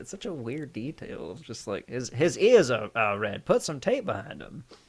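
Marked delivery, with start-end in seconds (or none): 1.9-4.6 put-on swooping, old-time New York accent. Imitating how crew talked on an old movie set: old New York accent. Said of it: "a New York an accent".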